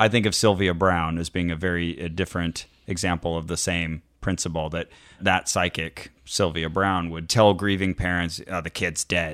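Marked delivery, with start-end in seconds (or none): 8.5-9.3 raspy smoker's voice, lower and quieter. Imitating a psychic telling grieving parents bluntly: Sylvia Browne raspy smoker voice. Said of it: "in her raspy, cigarette smoking voice".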